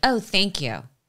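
mock snarky, sarcastic, insincere tone. Retelling own response to a shut door: imitating sarcastic thanks.

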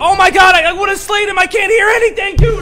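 very high, very loud, shrill, raging furious yell. After losing a fight in a game, a player is really mad. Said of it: "I'm so freaking mad".

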